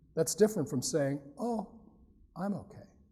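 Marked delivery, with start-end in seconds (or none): 1.4-2.8 very hushed, hesitant, halting, with a pause. Showing how tone changes meaning, the speaker demonstrates a reply: hesitant, with a pause. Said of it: "A little bit of hesitation".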